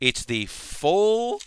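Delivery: very high voice breaking and cracking. Describing a model kit, the speaker's voice cracks mid-phrase. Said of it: "my voice cracked there".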